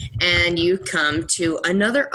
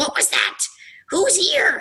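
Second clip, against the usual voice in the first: piercing, very high, shrill, swooping cries; 12 semitones higher than usual. Game master voicing the speakers the players hear in Draconic: shrill voices. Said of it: "you'd hear some like shrill voices like".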